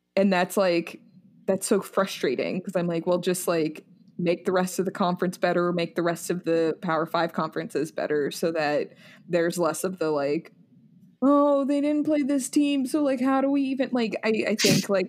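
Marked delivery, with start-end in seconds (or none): none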